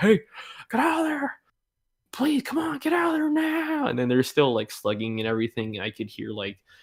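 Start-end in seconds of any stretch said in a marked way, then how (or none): 0.0-3.9 mock, very high-pitched, urgent yelling. Retelling teachers yelling at fighters inside a bathroom: imitating teachers yelling. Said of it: "so they're yelling like".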